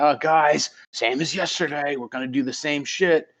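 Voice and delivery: put-on yelling. Retelling a character talking to his men: imitating someone yelling. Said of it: "he just yells at his men".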